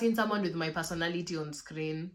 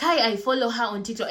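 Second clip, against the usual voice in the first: loud, eager call-out for all to hear; 4 semitones higher, 3 dB louder than usual. Kai acts out someone who passes her saying it in a loud voice. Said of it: "you say it in a loud, loud voice".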